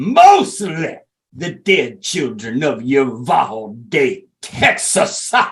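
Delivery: mock overdramatic, theatrical speechmaking style. Mocking a speaker as straight up acting: mock overdramatic speech. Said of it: "he might as well stood up there and been like".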